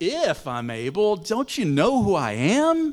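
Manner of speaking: loud, swooping, snarky, sarcastic tone. Imagining Jesus chastising the man, the speaker acts out his words: mock-snarky tone. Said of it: "saying to him in a snarky tone".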